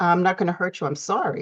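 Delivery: ordinary delivery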